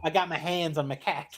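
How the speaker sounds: put-on, mocking Boston accent. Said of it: "the Boston accent".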